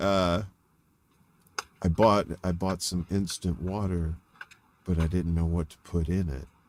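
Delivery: put-on deadpan, droll, low, almost monotone delivery. Retelling one of his bizarre one-liners, imitating droll near-monotone delivery. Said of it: "very droll, very almost monotone".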